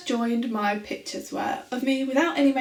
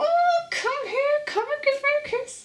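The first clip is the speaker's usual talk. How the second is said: small, very high, tiny little voice. Speaker jokes about getting men with modelling pictures, using a little voice. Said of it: "with my little voice".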